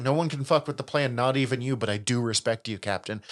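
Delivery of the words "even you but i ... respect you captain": ordinary talk, nothing marked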